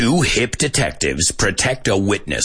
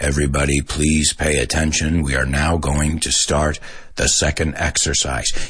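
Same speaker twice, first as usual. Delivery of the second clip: low, level, flat, unchanging monotone; 6 semitones lower than usual. Explaining the word monotonous, then demonstrating it: monotone. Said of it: "There's no changes in the pitch of your voice".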